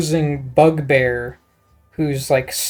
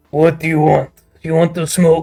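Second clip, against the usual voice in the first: put-on goblin creature voice. Narrating a tabletop scene, the reply to a disguised visitor comes in goblin voice. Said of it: "You hear him reply in Goblin".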